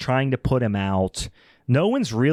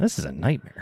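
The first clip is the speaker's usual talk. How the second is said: put-on mildly irked tone, low mutter; 5 semitones lower, 5 dB quieter than usual. Retelling how a man reacted to a disaster, imitating mild annoyance. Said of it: "He says it like he got to Avis Rent-A-Car".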